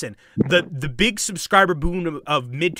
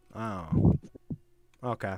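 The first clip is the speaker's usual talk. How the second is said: soft, downcast, deflated, sad-sounding voice; 7 semitones lower, 7 dB quieter than usual. Answering another player who says the joke came from them: sad. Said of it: "why did you sound so sad?".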